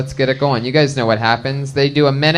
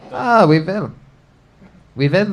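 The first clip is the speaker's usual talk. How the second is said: put-on mock German accent, higher pitch; 4 semitones higher than usual. Joining a plan to do everything in a German accent tonight, in a put-on German accent. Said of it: "Let's just do everything with a German accent tonight".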